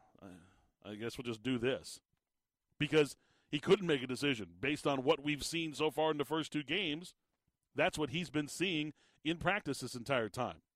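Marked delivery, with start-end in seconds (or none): 0.2-2.0 slow, resigned, going-along-with-it delivery. Imitating how the coach sounded announcing two quarterbacks: imitating a resigned sighing coach. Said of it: "it sounded like he was more like".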